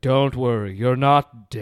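slow, strange, weird divine voice. Quoting a movie line in a weird voice of God. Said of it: "kinda sounded like this weird voice of God".

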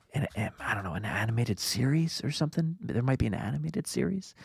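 quiet, hushed, secretive low-key voice. Listing the topics to be discussed today: said quietly. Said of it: "I'm gonna say this quietly".

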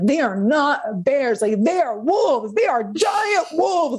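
loud yell rising in pitch. Retelling a character's warning to her dad: imitating Bella yelling. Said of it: "she's, like, yelling".

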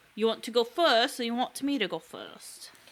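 clumsy, bad put-on English accent, spoken softly. Asking the other speaker who goes first, in a bad english accent. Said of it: "That was a bad English accent".

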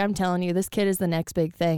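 ordinary talk

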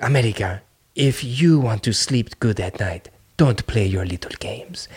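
terrible put-on Korean accent. Retelling a threat from Kim Jong-un's sister: terrible accent imitating Kim Jong-un's sister. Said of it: "that terrible accent".

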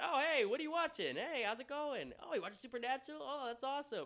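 uppity, sing-song, very high, loud, cheery voice. Retelling how the roommate walked in while the speaker was teary: imitating a cheery, uppity roommate. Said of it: "my roommate's a very uppity, cheery, like, type of guy".

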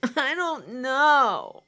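put-on high, whiny kid voice, know dragged out. Retelling asking themselves what to do first, imitating a whiny kid. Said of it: "in my best whiny kid voice".

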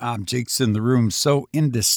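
ordinary delivery

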